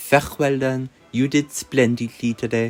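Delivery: awful, fake, terrible French accent. A character praising someone's work today, in a terrible French accent. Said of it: "that terrible accent".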